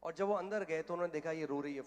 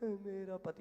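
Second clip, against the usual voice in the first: mock-tearful, crying speech, higher pitch; 4 semitones higher than usual. Retelling how a scolded woman spoke, the speaker is imitating a woman crying. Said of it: "वो रोते रोते बोली".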